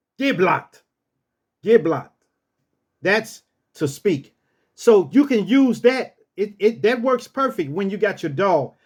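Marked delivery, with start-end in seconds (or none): 0.2-2.1 firm, authoritative, commanding tone. Showing how to give a dog a command, saying it with authority. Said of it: "Say it with authority".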